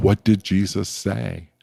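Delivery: put-on Missouri-accented voice. Retelling how Dallas Willard questioned the group sitting in a circle, in Dallas Willard's Missouri voice. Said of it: "in his Missouri voice".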